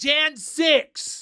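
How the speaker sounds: very high, shrill, blurted-out yelled outburst. In a chat about buying listeners' merch, the speaker calls out a misheard name, yelling. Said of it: "Now you're just yelling Jan 6th".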